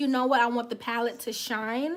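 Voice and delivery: normal talking voice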